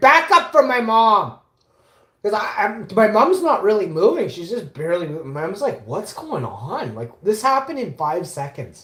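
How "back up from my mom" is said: very loud, high, slow, drawn-out yell. Recounting yelling at a woman screaming at them and their mom, retelling own yell. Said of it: "I'm yelling at the Karen".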